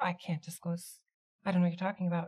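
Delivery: shy, evasive voice, shrinking back. Questioned by someone pressing for answers, shying away, evasive. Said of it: "Kind of shies away".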